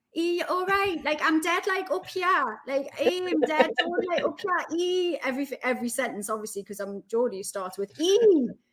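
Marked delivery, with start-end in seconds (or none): 0.2-5.2 put-on very high, squeaky, younger teenage chattering voice. Mimicking how her own voice sounded at nineteen, imitating her younger high-pitched voice. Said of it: "My voice seems very high pitched as well".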